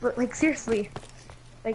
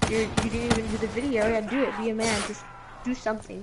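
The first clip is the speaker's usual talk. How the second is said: normal talking voice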